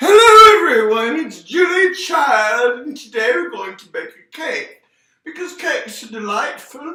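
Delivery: belted out loud, high and silly. Starting to make a cake, in a not very good Julia Child voice. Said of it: "not a very good Julia Child imitation".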